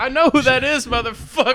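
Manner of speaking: furious outburst. Retelling what an angry comedian shouted: imitating a furious comedian. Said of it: "she was pissed".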